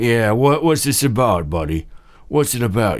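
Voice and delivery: barmaid voice, talking around a cigarette in mouth. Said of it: "they got a cigarette dangling from their lips".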